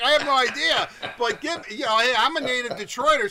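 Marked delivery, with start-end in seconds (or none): 0.0-0.9 loud, shouted, yelled. Retelling a reply shouted back at a parade: imitating own screaming back. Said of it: "I'm screaming back".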